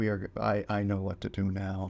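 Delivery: flat, dead monotone delivery. Retelling how a movie character announces her plan: Madame Web monotone. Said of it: "the entire time she is very monotone and goes".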